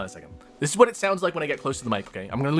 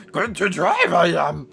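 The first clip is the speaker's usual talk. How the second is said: put-on drunken voice, higher and louder; 4 semitones higher, 6 dB louder than usual. Your partner remarks on your weird, drunken character; carry on in a weird drunken Yoda voice. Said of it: "That's like a weird drunken Yoda".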